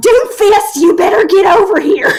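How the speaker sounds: very high stern schoolmarm yelling. Retelling shouting at an enemy doomfist in a match: imitating a school marm yelling. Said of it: "You sound like a school marm yelling at her kids".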